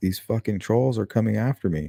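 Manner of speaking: mock weeping, tearful, upset crying outburst. Acting out an upset woman complaining to her father: imitating someone crying.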